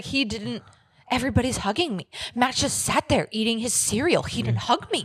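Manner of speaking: sudden switch into a put-on Irish accent. Retelling what a woman said in a confessional: imitating her in an Irish accent. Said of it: "Why is she Irish all of a sudden?".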